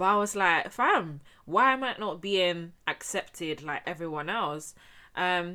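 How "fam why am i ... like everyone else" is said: ordinary talk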